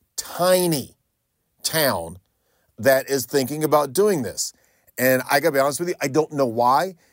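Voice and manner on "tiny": tiny stressed, high, set off by pauses. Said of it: "I cannot emphasize that word enough".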